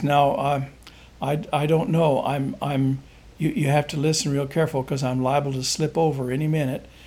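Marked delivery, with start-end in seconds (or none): none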